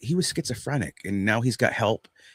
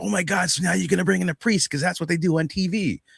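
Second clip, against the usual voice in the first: high, eager, all-excited chatter; 7 semitones higher than usual. Retelling what one woman said, imitating an excited woman. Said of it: "she was all excited".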